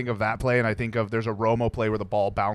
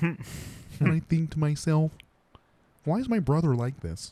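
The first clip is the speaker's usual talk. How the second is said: terrible, high-pitched frog puppet voice; 5 semitones higher than usual. Joking about football players: terrible Kermit the Frog voice. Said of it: "My terrible, uh, Kermit the Frog impression".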